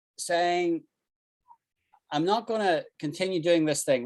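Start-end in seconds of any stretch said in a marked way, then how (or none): none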